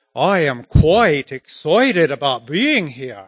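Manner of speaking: put-on proper English accent. Recalling a woman behind him in an airport coffee shop line, imitating a proper English accent. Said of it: "She was talking more like this".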